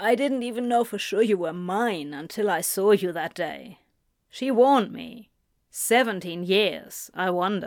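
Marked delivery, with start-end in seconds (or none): none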